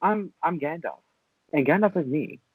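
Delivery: meek, soft, small voice. Mocking a film wizard who does not announce himself: meek Gandalf imitation. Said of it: "not just come off like".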